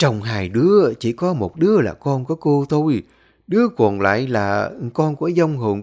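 ordinary delivery, nothing marked

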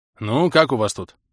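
plain reading voice

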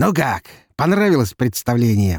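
merry, cheery, cheerful tone. An unknown caller speaks to the narrator over the phone, cheerful voice. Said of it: "прозвучал в трубке веселый голос".

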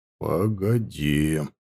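very low, very quiet mutter forced through clenched teeth. Narrator reads a man answering a woman without looking at her: through gritted teeth, very quietly. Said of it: "процедил очень тихо".

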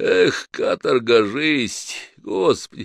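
sleepy voice. A worker woken by the night watchman answers, in a sleepy voice. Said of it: "чей-то сонный голос".

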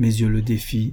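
ordinary delivery

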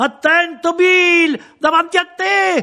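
screaming. A woman on the sidewalk screams a warning to Bill amid the crowd's shouting. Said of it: "una voce femminile che urlava".

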